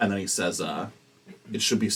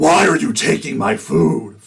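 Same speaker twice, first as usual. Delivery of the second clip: furious, very loud, high angry outcry; 8 semitones higher, 12 dB louder than usual. Game master voicing the hungry voice as players carry the barrels out, angry voice. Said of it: "The voice gets angry".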